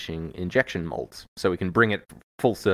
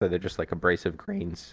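voice cracking. Talking through a technical explanation on a podcast, voice cracking. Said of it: "The voice is cracking".

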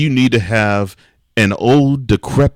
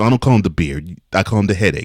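ordinary delivery

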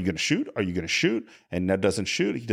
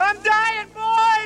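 very high, loud screaming call-out; 5 dB louder than usual. Retelling how a kid hit in the belly called out, retelling a kid's scream. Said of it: "the kid is calling out and screaming".

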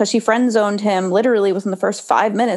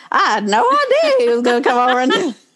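put-on woman's voice, higher pitch; 4 semitones higher than usual. Retelling how Tia seemed to react: Tia impression. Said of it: "I love your Tia impression".

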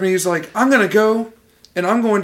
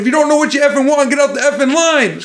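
terrible put-on Italian New York accent, pitched up; 7 semitones higher, 4 dB louder than usual. Quoting a guy at a restaurant line in a terrible italian new york accent. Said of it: "excuse my, like, terrible Italian New York accent".

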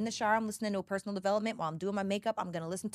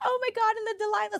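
weepy, overcome, tearful gush, very high and raised; 14 semitones higher, 5 dB louder than usual. Retelling her own words while alone crying in her room: imitating her own crying. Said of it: "by myself in my room crying".

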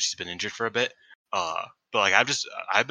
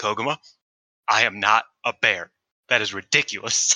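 very stern, dead serious, raised voice; 5 dB louder than usual. Retelling a pre-match promo line, imitating Ami Sourei's stern tone. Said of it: "got very stern".

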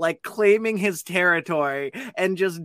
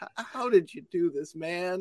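put-on voice on the verge of tears; 10 dB quieter than usual. Retelling what a dad in a restroom stall said: imitating someone about to cry. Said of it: "literally sounded like he was about to cry".

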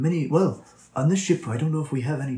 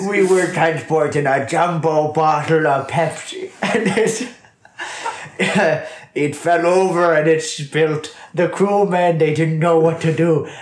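speech breaking into laughter throughout; 3 semitones higher, 7 dB louder than usual. Explaining how the crew died, laughing while talking. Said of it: "We can't keep a straight face".

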